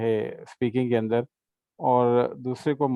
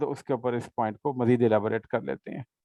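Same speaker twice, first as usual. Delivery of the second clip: normal talking voice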